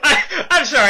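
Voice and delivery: very high, loud speech cracking into laughter. Apologizing for interrupting another speaker, laughing while talking. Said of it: "I just had to laugh".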